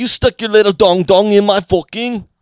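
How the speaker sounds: put-on performed Jamaican accent, done well. Riffing on imagined people who used fish as flashlights, in a Jamaican accent. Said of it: "you did Jamaican pretty good".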